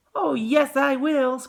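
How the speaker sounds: tiny, very high little squeak, slow. Reading a story aloud, the boy answers his parents: tiny squeaky Mike Teavee voice. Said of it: "squeaked the tiny voice of Mike T V".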